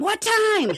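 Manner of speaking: put-on abrupt, very high, loud sudden scream. Retelling a moment of screaming a question at friends: imitating own scream. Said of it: "I scream at them".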